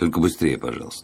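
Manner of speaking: ordinary delivery, nothing marked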